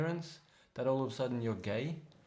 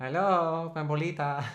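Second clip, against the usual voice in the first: put-on Mexican accent, higher and louder; 4 semitones higher, 8 dB louder than usual. Showing how a voice sounds if you go Mexican: put-on Mexican accent. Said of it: "if you go Mexican".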